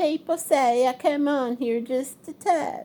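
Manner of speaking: high, derisive, taunting mock voice. Analyzing a woman's behavior, imitating her mocking voice. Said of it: "The mocking voice where she says".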